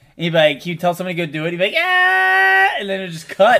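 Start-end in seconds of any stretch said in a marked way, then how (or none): 1.8-2.7 very high, stretched-out, drawn-out villain scream. Retelling how the villain ends scenes with a scream: imitating the villain's scream. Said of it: "he would just scream".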